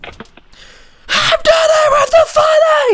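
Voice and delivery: yelling at full volume. Practicing a catchphrase because the other person said to scream it, screaming. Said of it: "You said you have to scream it, so I did".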